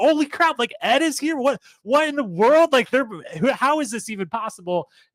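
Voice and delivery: high, loud, excited screaming freakout.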